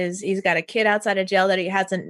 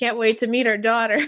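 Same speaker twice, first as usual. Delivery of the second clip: put-on thick Southern accent; 2 semitones higher than usual. Imitating a movie character's letter voiceover: imitating a thick Southern accent. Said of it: "with the thick Southern accent".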